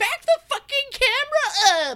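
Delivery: angry yelling, very high-pitched. Retelling yelling at the screen while everyone else cried; retelling a yell at the screen. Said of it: "I was like yelling at the screen".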